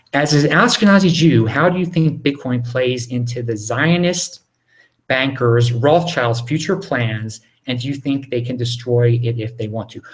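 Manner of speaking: plain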